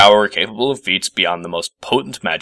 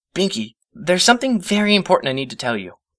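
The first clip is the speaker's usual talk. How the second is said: speaking more softly, higher pitch; 10 semitones higher than usual. Reading a story aloud, after a yelled wait: softer voice. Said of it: "adding in a softer voice".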